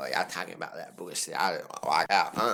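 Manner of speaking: deep, low-pitched voice.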